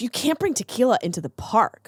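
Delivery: acted, sassy, know-it-all, snippy attitude. Retelling what the girl at the park said: imitating someone with attitude. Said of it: "with an attitude".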